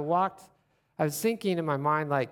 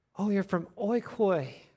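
put-on acted old woman voice, suddenly excited and eager; 4 semitones higher than usual. Retelling how an old Lutheran woman reacted on hearing where they were from: imitating Loretta getting excited. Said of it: "She got excited".

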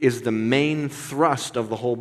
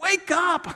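very high-pitched, urgent, intense cry. Acting out the tone of a scripture passage: imitating a lapel-grabbing urgent caller. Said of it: "a grab you by the lapels sort of guy going like".

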